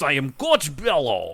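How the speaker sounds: put-on stock Russian accent, put on. Describing Coach Bello to the listeners, doing Coach Bello's Russian accent. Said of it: "he talks like this".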